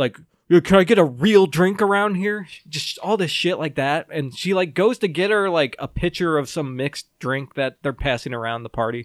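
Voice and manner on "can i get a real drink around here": acted, snide, passive-aggressive tone of voice. Retelling a party story, imitating a woman being mock passive-aggressive. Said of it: "she's being super passive aggressive with Beth".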